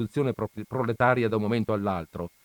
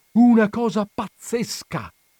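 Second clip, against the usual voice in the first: very high, loud, breathless, panting cry; 11 semitones higher, 8 dB louder than usual. Back from town and asked what is wrong, a man answers, exclaiming while panting. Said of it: "esclamò Don Camillo ansimando".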